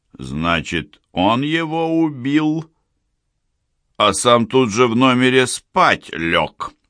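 slow, high-pitched, jeering, sarcastic mocking sneer. Narrator voicing an interrogator taunting a frightened innkeeper, mocking. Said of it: "издевательски продолжал Бритый".

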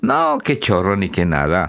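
ordinary delivery

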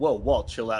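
ordinary delivery

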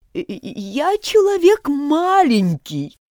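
high, quavering, trembling, shaken voice. The hatter, ordered by the angry king to give testimony, speaks in a trembling voice. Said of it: "произнес болванщик дрожащим голосом".

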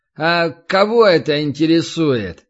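slow, lazy drawl with stretched words. A tall lad finally answers the newcomer, lazily drawling the words. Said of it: "лениво растягивая слова".

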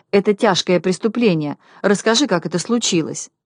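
ordinary delivery

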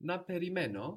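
na perimeno said with a rising tone. Greek lesson on na meaning shall: questioning tone on na perimeno. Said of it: "if you say with a question tone to your voice".

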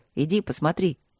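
plain

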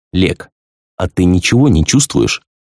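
ordinary delivery

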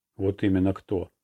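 ordinary talk

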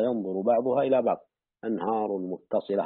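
normal talking voice

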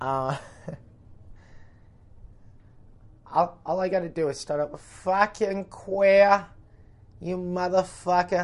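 put-on Boston accent. Showing he can do a Boston accent, in a Southie Boston accent. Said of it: "I can do a fucking Boston accent".

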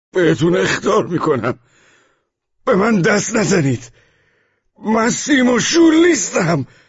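very high hysterical shriek, rising in pitch. Reading a novel aloud, a man shoving off people lifting him onto a stretcher, hysterical scream. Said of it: "فریاد هیستریکی کشید".

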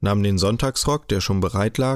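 ordinary delivery

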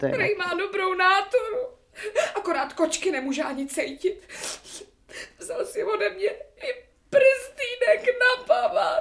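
weeping, crying through the words. A young woman telling her story to a listener, crying. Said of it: "No tak neplačte".

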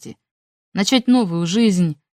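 ordinary delivery

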